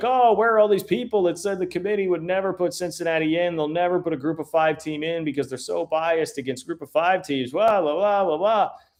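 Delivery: snide, scornful, mocking, sarcasm-dripping rant. Retell what he said when he came out, imitating someone mocking, dripping in sarcasm. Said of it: "mockingly, like the mocking, dripping in sarcasm take".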